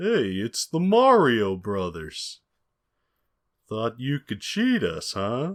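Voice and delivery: classic, hammy cartoon voice with big swooping tones. Retelling a cartoon where the Koopa Troopa catches the Mario Brothers, in classic cartoon voice. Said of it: "in classic cartoon voice".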